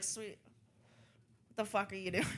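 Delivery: very hushed, quiet, muttered delivery. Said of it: "She's always like this".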